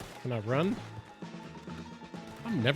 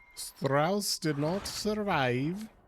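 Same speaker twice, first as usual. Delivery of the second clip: terrible put-on German accent; 6 semitones higher, 5 dB louder than usual. Commenting on a character's fate: terrible German accent. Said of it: "That was a terrible German accent".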